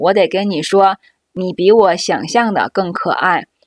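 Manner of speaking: ordinary talk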